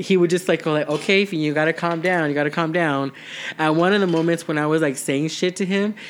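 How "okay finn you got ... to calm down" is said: ordinary talk, nothing marked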